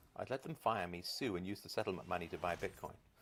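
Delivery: ordinary talk, nothing marked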